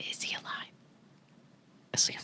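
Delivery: super quiet, barely audible whisper. Retelling a scene where she asks Harry whether Draco is alive, super quiet voice. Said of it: "in a super super quiet voice, barely".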